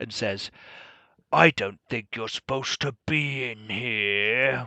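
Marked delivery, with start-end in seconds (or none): 1.3-4.7 big, gravelly, grumbly rumbling voice. Narrator voicing a stone guardian that comes to life as characters enter: big gravelly grumbly voice. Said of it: "with a big, gravelly, grumbly voice".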